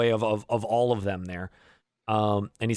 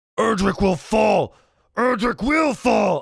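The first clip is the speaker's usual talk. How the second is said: shrill, very high, roaring bellowed war cry; 11 semitones higher, 6 dB louder than usual. Voicing an enemy fighter who shouts at a player: roaring war cry. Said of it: "He's roaring out at you".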